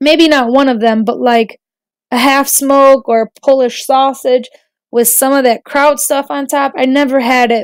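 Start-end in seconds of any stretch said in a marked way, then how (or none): none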